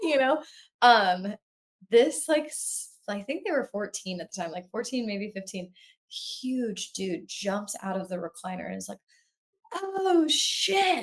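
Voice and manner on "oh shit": put-on frightened, very high, terrified yelp. Retelling a friend jumping up at a jump scare: imitating a terrified scream. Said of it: "screaming, he's, like, so scared".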